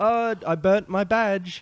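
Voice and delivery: very high, loud, slowly stretched comic voice. Acting out a bit from the show: Andy Samberg impression. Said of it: "I'll be Andy Samberg".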